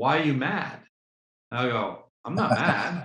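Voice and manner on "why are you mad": put-on crying, upset, faster. Retelling a fearful woman's reaction to being told no, imitating someone crying. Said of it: "she would get upset and start to cry".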